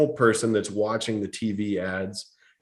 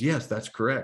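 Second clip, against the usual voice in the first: put-on sweet woman's voice, quieter; 4 dB quieter than usual. Retelling a phone call about car financing, quoting the woman who answered, in a sweet voice. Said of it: "the sweet voice says".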